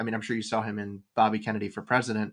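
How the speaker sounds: ordinary delivery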